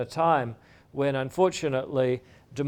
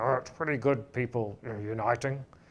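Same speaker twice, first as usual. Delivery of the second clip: put-on low, gravelly grandfather voice; 4 semitones lower, 7 dB quieter than usual. Retelling what grandfather said about the Berlin Wall news: imitating grandfather's gravelly voice. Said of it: "my grandfather in his gravelly voice saying".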